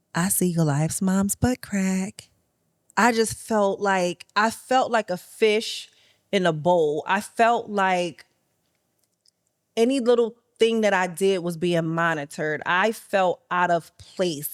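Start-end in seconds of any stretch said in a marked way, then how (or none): 0.1-2.2 mock whispering. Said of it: "in a whisper in my ear".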